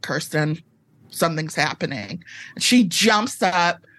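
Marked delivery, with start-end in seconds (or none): 0.0-2.2 grave, dead-serious, no-joke tone. Speaker re-enacts what they said to Kirsten, retelling a serious tone. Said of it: "I have one serious tone and I pulled it out".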